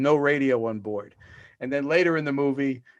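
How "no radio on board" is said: ordinary talk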